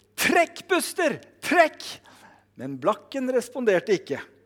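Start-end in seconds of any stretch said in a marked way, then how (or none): 0.2-1.9 very high shouted call. Telling a story, the speaker acts out the farmer calling his horse again, retelling a shout. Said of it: "igjen så ropte bonden".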